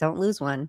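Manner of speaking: insincere, dry, sarcastic tone. Retelling what was said to a daughter before snowboarding: imitating her own sarcastic tone. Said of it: "I did this sarcastic".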